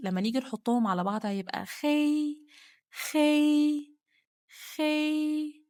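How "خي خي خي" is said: خي held on one high level pitch. Teaching how to join repeated syllables, high level pitch on خي. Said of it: "صوتي عالي، جايبة أعلى طبقة صوتية عندي".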